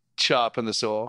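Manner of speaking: ordinary talk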